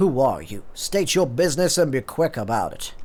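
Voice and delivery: put-on country cowboy accent. Voicing a character, trying out a country cowboy voice. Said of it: "like a country cowboy voice".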